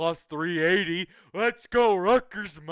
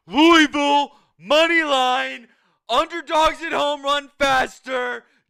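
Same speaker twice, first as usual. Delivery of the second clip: loud, hyped, energetic sales-style pitch. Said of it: "this is how you make a money line bet".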